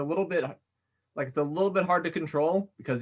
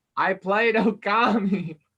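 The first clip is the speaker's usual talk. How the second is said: projected, louder, higher voice, word drawn out; 6 semitones higher, 6 dB louder than usual. Repeating a line louder after being told they sound quiet: speaking louder. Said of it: "This loud enough for you?".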